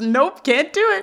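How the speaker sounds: bursting into giggles. Telling a story, quoting someone who gives up and bursts out laughing: retelling a giggle. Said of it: "busts up giggling and says".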